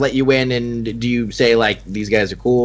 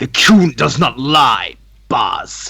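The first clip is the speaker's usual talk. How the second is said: voice raised a notch, a bit louder; 3 dB louder than usual. Voicing a character who raises his voice to the boss: raised voice. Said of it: "Patra kind of raises his, like, voice".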